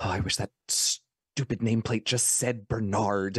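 soft half-whisper, under the breath. Casting a spell in character, muttering a wish: half-whispering under breath. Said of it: "I whisper under my breath".

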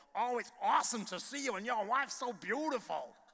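put-on drawling Texas accent. Retell how the lady you went to see greeted you, imitating Pat Pierce's loud Texas drawl. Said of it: "a loud sort of Texas drawl".

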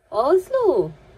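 loud, rising, repeated calling voice.

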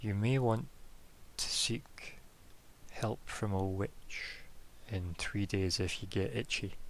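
hushed whisper. Voicing a character who leans in to tell a secret: whispering in character. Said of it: "whispers, and he says".

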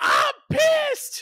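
put-on very high, furious, freaked-out squealing outburst. Retelling how she reacted to not being picked: imitating someone screaming. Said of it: "She was screaming".

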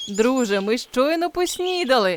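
amused exclamation broken by laughter. A narrator reads the boy answering the just-woken wolf cub, roaring with laughter. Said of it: "реготав хлопчик".

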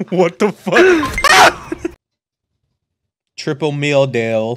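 words dragged out very slowly, sounding pained. During a game, a player calls out to a teammate, sounding pained. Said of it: "Why did that sound like it hurt for you to say?".

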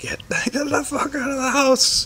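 shrill, high-pitched scream, pitched way up. Retelling how dad pounded on the door, imitating his scream. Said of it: "screaming like".

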